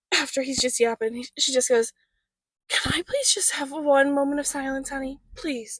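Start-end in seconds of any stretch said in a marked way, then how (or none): 2.6-5.8 utterly distraught, pleading voice. Retelling what an exhausted mom said to her child: imitating a distraught voice. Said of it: "the most distraught voice in the world".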